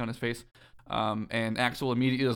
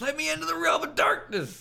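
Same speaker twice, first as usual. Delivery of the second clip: play-acted very high, hoarse, furious voice. Retelling a story scene where Sora, mad and confused, demands access: imitating Sora demanding angrily. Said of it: "Sora's mad and confused and demands".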